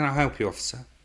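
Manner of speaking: put-on posh accent. An officer retells what the driver he pulled over said, in a posh voice. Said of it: "she spoke very posh".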